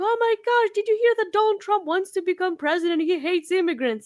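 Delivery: high-pitched screaming. Retelling how a friend called with the news: imitating a friend screaming. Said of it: "started screaming".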